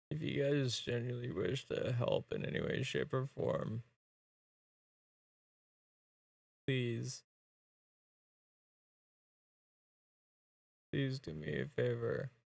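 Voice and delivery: emotional, choked-up voice. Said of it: "I again apologize for being so emotional".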